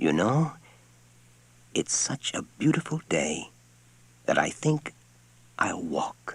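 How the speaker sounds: gentle, soft, quiet, soft-spoken voice. Narrator reads a character's line as he turns from the door, soft voice. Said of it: "he said in a soft voice".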